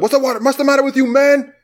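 put-on shriek, way up high. Retelling the scene where Apollo screams one more time, Apollo's scream. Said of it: "he can't help himself but scream one more time".

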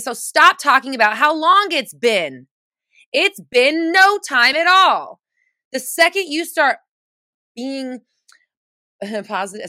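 screaming, slow-paced, loud, drawn-out yelling. Speaker talks to the listener and apologizes afterward: screaming. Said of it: "I apologize for the screaming".

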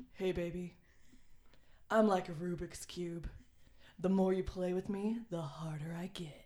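fake, put-on man's voice. Reading a nerdy pickup line to the co-hosts, in a put-on man voice. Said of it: "Should I do it in my man voice?".

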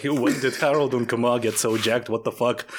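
ordinary delivery

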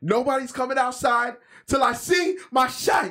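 very high pitch, every word drawn out. Quoting a line from John Q after the others praise it: Denzel Washington impression. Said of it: "You're getting good on your Denzel, uh, impression there".

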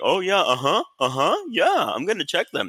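mock snide, dismissive tone. Retelling a security guard's reply: imitating a mocking guard. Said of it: "He was mocking me the whole time".

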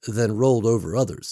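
ordinary delivery, nothing marked

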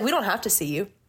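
acted sassy delivery. Retelling telling maskless customers off: retelling a sassy retort. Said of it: "I love sassy [name]".

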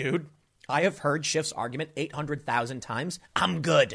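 normal talking voice

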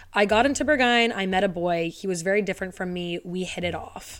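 plain

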